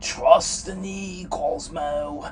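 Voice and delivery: spooky, ghostly, very slow, drawn out, loud, booming. Narrating a story, Ditto chimes in to Cosmo in a spooky voice. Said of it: "said Ditto in a spooky voice".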